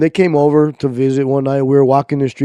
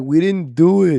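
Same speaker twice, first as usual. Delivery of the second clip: mock tearful speech, as if crying; 2 semitones higher than usual. Retelling denying something to the police as children: retelling crying words. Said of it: "I was crying".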